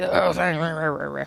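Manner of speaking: words growled back. Imagining how an actor would answer a fan: growling Ray Winstone voice. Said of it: "He'd just growl at you".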